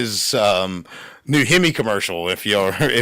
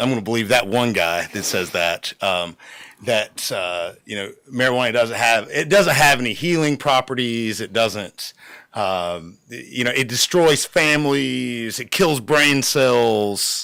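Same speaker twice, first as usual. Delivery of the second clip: ordinary delivery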